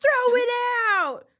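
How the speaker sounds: mock yelling. Retelling how a worker started yelling at a friend: imitating someone yelling. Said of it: "he starts yelling at Talia".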